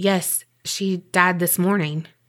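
ordinary talk

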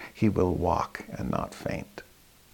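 hushed, softening whisper. Speaker repeating a verse to show the echo fading, even softer. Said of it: "Let me say it even softer".

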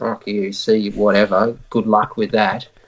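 quiet muttering under the breath. After Rob says they'll go first, speaker replays their reply: retelling muttering under breath. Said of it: "under my breath".

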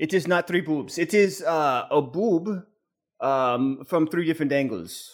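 put-on Spanish accent. Answering criticism of a drawing, in a bad Spanish accent. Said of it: "my Spanish accent is a little off tonight".

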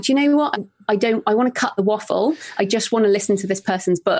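ordinary talk

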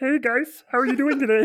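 very high-pitched, loud puppet voice. Retelling talking to the guests through a puppet before the show, in Kermit the Frog voice. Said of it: "And it went a little something like this".

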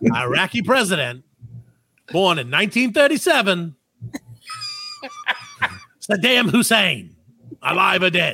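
bad, hammy quiz-host voice, swooping and sing-song. Quizzing players on whether a celebrity is dead, worst Regis voice. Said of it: "in my worst Regis voice".

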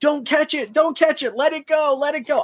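put-on shrill, very high, repeated yelling. Recounting yelling from the sideline at a player about to catch a kickoff, retelling own yelling. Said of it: "and I was yelling".

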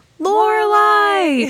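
play-acted high, united crowd shout. Retelling the whole audience answering at once: imitating a crowd shouting. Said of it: "at one time shout".

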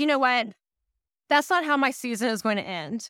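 ordinary delivery

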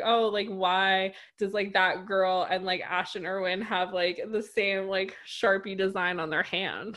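usual speaking voice

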